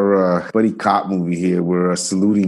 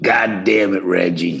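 slow, drawn-out, burp-like drawl. Trying the same Nick Nolte line after the other speaker: imitating Nick Nolte. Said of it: "all my guys sound the same".

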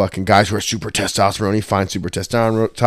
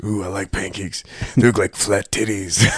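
put-on monster voice; 5 dB quieter than usual. Quoting a scene from the cartoon Big Mouth: hormone monster voice. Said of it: "That's how he talks".

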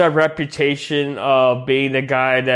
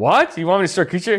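high, angry, indignant, pissed-off outburst; 5 semitones higher than usual. Retelling a manga scene, voicing the hero refusing the princess: acting out an angry character. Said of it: "He gets pissed off".

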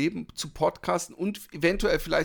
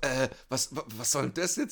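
put-on embarrassed woman voice; 3 dB quieter than usual. Retelling a woman's reaction when a man repeats that she called someone ugly: imitating visible embarrassment. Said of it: "Und sie so wirklich sichtlich, peinlich berührt".

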